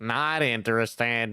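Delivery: cartoon character voice. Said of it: "somebody doing a Squidward impression".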